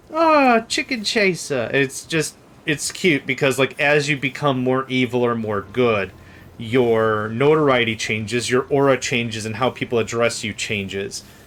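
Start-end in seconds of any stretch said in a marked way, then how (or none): 0.2-1.7 put-on very high, sing-song, swooping English accent. Describing how everyone addresses a player by rank title: British accent. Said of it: "everyone has like a a British accent".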